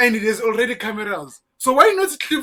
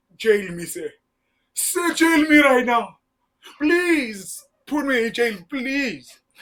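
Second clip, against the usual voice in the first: slow, drawn-out pleading. Retelling how a witness begged to be jailed: imitating someone begging. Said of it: "begging to be jailed".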